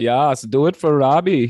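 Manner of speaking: German accent impression, put-on. Retelling a story about getting someone to do things, in a German accent impression. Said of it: "Is that a good German impression?".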